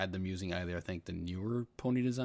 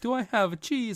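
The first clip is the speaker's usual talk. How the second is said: put-on mock Swedish accent; 8 dB louder than usual. Retelling a Muppet cheese character's lines: Swedish Chef accent. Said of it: "he was making the accent".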